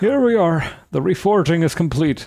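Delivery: put-on elderly Irish brogue. Voicing the game character who reforges the nail, in an old Irish accent. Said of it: "I think I gave this guy like an old Irish accent".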